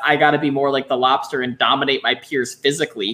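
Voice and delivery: ordinary talk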